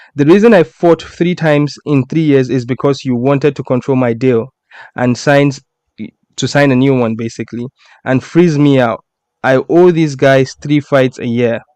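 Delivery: ordinary delivery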